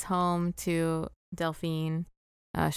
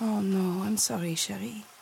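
put-on French-accented character voice; 3 semitones higher than usual. Repeating Delphine's line after another speaker's impression: intense Delphine impression. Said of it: "the Sherry was really intense".

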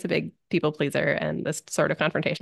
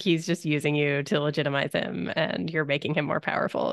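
usual speaking voice

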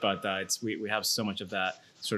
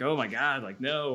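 play-acted, appalled, disbelieving, high, drawn-out shocked outburst; 5 semitones higher, 3 dB louder than usual. Shop worker retelling a visitor's reaction to what the shop sells: imitating a shocked reaction. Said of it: "she had this like physical sort of reaction".

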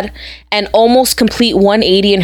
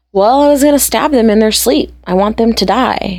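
small, guileless, innocent little voice; 2 semitones higher than usual. Quoting her answer when asked in a documentary: imitating an innocent little tone. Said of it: "the most innocent little tone".

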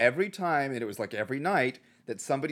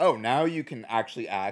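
ordinary talk, nothing marked

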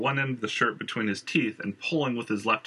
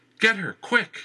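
very high, loud, raised begging and pleading cry; 11 semitones higher, 5 dB louder than usual. Narrator reads a trapped man urging an usher to help a woman: pleading. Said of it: "Thomas pleaded".

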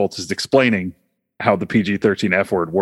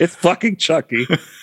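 shrieking, very high-pitched scream; 9 semitones higher than usual. Recalling a scene from Ready Player One, retelling someone's scream. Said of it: "Somebody just screams".

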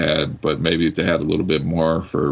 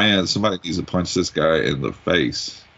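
normal talking voice

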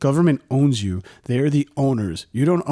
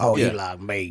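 put-on low, soft old cowboy voice; 6 semitones lower, 5 dB quieter than usual. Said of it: "he talk like this".

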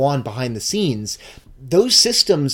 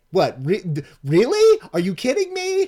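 mock stunned, incredulous, rising disbelief; 8 semitones higher than usual. Retelling the players' reactions to a surprise: imitating Sombra's surprised reaction. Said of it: "you hear Sombra being like".

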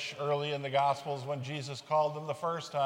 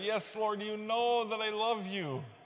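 put-on wounded, hurt, exasperated, frustrated voice, pitched up; 7 semitones higher than usual. Retelling Peter answering Jesus who asks three times: acting Peter hurt and frustrated. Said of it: "You can hear it in Peter's voice, how hurt he is, how frustrated".

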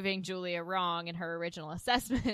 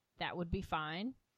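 very reserved, flat, soft delivery; 6 dB quieter than usual. Retelling a scene where Julia answers a suitor, in Julia's reserved flat voice. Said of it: "in a very reserved, flat line voice".

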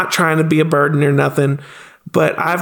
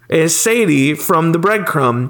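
ordinary delivery

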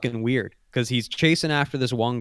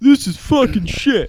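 mock whiny baby voice, higher and louder; 12 semitones higher, 8 dB louder than usual. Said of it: "he's just a baby".

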